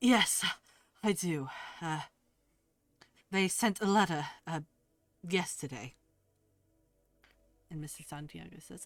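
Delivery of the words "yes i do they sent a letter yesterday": out of breath, winded. Answering whether he has business with the council, like he just sprinted here. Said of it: "like somebody who just sprinted here voice".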